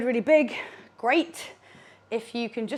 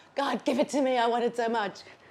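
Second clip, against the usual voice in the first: jokey, playful, pleading tone. Leading a lunge exercise, showing how to beg: mock pleading. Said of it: "bend down and beg".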